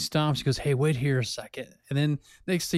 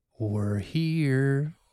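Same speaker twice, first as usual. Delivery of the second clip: disguised, masked voice with "here" drawn out. Retelling a prank phone call: imitating a disguised voice. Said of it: "in a disguised voice".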